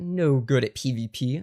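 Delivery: sudden put-on bass voice, very low pitch. Streamer greeting chat viewers by name, in a deep voice. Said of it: "I did a deep voice there".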